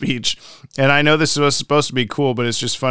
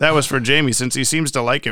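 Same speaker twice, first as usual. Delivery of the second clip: plain reading voice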